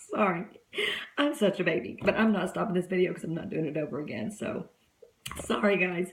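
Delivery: tearful, still weepy voice after crying. Apologizing to viewers mid-video after crying, tearful. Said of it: "and it made me cry".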